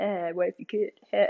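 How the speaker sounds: play-acted sly, smug, soft needling tone. Speaker mimics people who said this to her, imitating a smirking tone. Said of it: "they'd say it with like this smirk".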